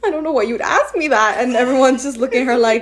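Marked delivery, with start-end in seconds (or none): 0.0-1.4 words coming through sobs, tearful crying voice. Retelling a TV moment where Kris Jenner was asked her biggest fear: imitating Kris Jenner crying. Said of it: "She started crying".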